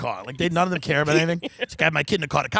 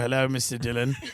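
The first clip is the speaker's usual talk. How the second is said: put-on meek, downcast, sad British accent; 5 semitones lower, 4 dB quieter than usual. Retelling what the car dealer said to the speaker: imitating a sad british guy. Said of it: "This sad little British guy is like".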